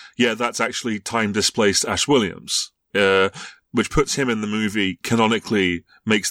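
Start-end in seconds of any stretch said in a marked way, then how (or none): none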